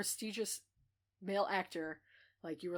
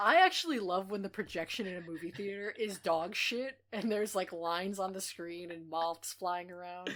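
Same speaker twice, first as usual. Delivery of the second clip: usual speaking voice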